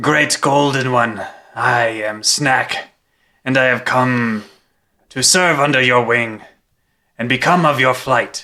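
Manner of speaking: theatrical, grand, dramatic delivery in character. Voicing a character bowing to a dragon: dramatic in-character address. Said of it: "a dramatic, um, bow to the dragon".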